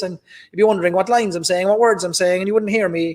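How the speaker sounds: unfiltered Cork accent. Explaining he tones down his accent for audiences, demonstrating: full cork accent. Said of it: "I'd be talking like this".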